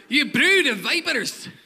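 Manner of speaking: put-on loud, slow, sermon-like Scottish accent. A preacher quotes John the Baptist preaching to the crowds, in a Scottish accent. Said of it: "I always read John the Baptist in a Scottish accent".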